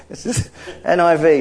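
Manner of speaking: laughing through the words.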